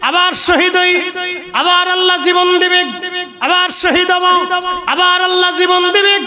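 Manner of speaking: high, defiant calling out.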